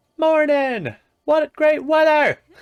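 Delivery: very high, loud, stretched-out yelling. Voicing a store character in a game greeting customers: yelling game character. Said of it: "She just yells".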